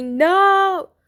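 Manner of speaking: loud, high screaming.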